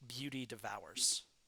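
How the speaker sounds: ordinary talk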